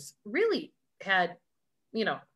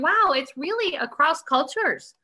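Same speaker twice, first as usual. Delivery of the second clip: put-on laughing delivery, pitched up; 7 semitones higher, 5 dB louder than usual. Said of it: "I was like laughing going".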